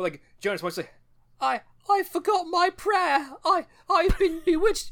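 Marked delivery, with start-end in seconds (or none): 1.4-4.9 put-on child character voice, much higher, slower. Talking about the twin boy from a show, doing a Jonas impression. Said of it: "This is an accurate impression".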